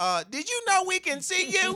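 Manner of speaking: very high, very loud, shrill stand-up comic voice. Retelling a funny movie scene, doing a Katt Williams impression. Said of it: "My impersonation is pretty good".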